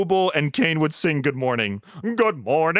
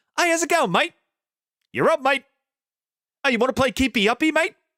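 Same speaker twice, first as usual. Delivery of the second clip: pitched-up Australian accent in cartoon-dub style; 6 semitones higher than usual. Imagining an Australian dub, speaker demonstrates it: Australian accent. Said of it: "but with like an Australian accent".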